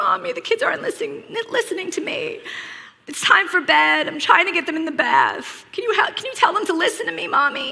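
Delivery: acted child's whimpering whine, high and near tears. Retelling her son's plea at bedtime: imitating a whining, half-crying child. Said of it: "he's half whining, and he's half crying".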